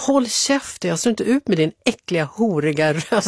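ordinary talk

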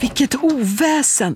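shrill, high, howling cry. A man rushing in after a cup is smashed in the kitchen, shrieking. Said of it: "tjuter Frans".

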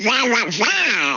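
garbled cartoon duck voice.

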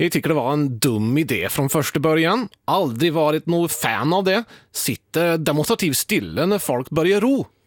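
Swedish spoken with a put-on Norwegian accent. Quoting a man's view, the speaker switches to a Norwegian accent. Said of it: "Jag ska försöka prata på norska då".

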